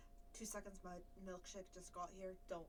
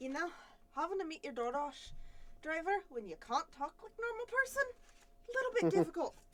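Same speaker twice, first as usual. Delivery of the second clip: fake Irish brogue, very high, very loud, slow; 10 semitones higher, 15 dB louder than usual. Complaining about meeting a delivery driver while staying in character: put-on Irish accent. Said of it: "stay Irish while I'm doing a session".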